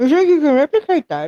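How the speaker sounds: talking with mouth full. Showing how they will challenge her over a taffy, with a mouth full of pastry. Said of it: "With a mouth full of pastry".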